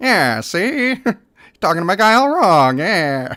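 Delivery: loud, drawn-out forties gangster wise guy voice. Showing the kind of wise guy to voice later: forties gangster wise guy voice.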